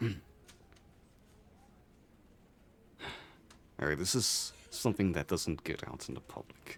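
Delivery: soft, hushed, confidential-sounding whisper. Voicing a character who kneels to whisper in a player's ear: whispering. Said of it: "And whisper in your ear".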